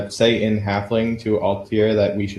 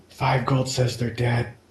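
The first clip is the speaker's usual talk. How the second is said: very quiet whisper; 2 semitones higher, 4 dB quieter than usual. During the game, a player's character whispers to a companion, very quiet whisper. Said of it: "I very quietly whispered to Altair".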